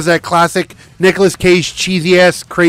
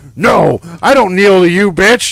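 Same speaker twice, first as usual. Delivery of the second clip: put-on voice snapping with rage; 3 dB louder than usual. Retelling a movie scene where a captive suddenly wigs out: imitating someone snapping in rage. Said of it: "he fucking, like, wigs out".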